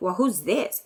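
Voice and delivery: play-acted sassy, snippy tone with a bit of attitude. Retelling a phone call with an unknown caller: imitating own past attitude. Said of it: "I had a little bit of an attitude".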